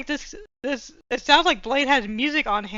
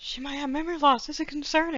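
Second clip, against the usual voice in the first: loud theatrical stage whisper, meant to be overheard; 4 semitones higher than usual. Voicing Kira whispering to Lucy so all can hear: stage whisper. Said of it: "Stage whisper".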